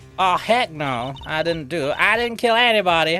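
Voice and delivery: put-on speaking in a Southern accent. Playing a character accused of killing the other's colleague, in a southern accent. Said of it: "she's got the same southern accent".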